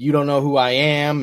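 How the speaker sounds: ordinary talk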